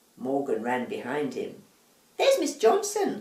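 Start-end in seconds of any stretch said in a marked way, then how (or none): 2.2-3.2 shouting out at a very high pitch. Narrator reads him at the window as Morgan runs up, shouting. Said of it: "he shouted".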